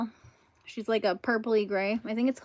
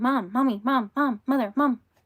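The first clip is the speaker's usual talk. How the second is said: put-on loud, hollering animated cartoon baby voice; 3 semitones higher, 5 dB louder than usual. Repeating a line from Family Guy: Stewie voice. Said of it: "Like from Family Guy, Stewie".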